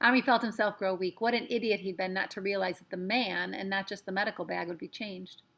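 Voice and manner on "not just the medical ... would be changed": ordinary delivery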